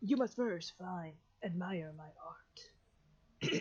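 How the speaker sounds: odd, airy, breathy voice, drawn out very slowly. Voicing a figure guarding a doorway: weird breathy voice. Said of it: "It's all breathy".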